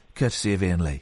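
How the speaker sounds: gentle, soft delivery. Coaching someone through a rhyming line, demonstrating it in a softer voice. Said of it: "And then in a softer voice".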